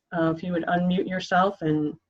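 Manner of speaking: usual speaking voice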